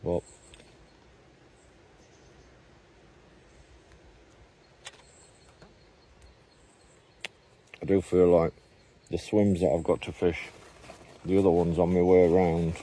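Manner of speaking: mumbling with something in mouth. Fishing on camera and talking through the swims, mumbling with line in mouth. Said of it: "sorry I'm mumbling because I've got line in my mouth".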